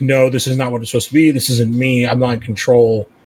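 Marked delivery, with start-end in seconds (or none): none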